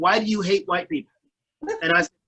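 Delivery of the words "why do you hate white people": ordinary talk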